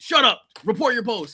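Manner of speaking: boot-camp drill sergeant voice. Retelling being caught writing at three in the morning, imitating a drill instructor. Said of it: "A drill instructor".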